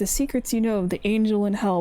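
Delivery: normal talking voice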